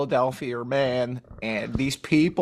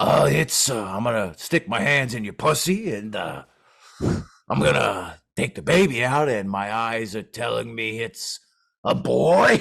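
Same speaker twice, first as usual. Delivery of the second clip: put-on eighty-year-old man voice, pitched lower; 2 semitones lower than usual. Joking that an eighty-year-old man wouldn't deliver a baby, imitating an eighty-year-old man. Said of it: "just be like".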